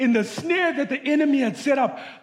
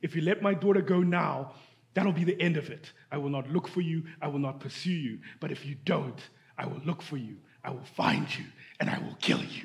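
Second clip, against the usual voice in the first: put-on gruff voice, lower and quieter; 9 semitones lower, 9 dB quieter than usual. Retelling a movie father's phone call to kidnappers: gruff Liam Neeson voice. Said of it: "in his gruff voice".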